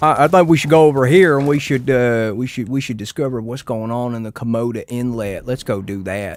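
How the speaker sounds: put-on rural country-style accent. Showing someone the accent they mean, the speaker does a country accent. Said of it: "I can do the country accent where you're talking like this".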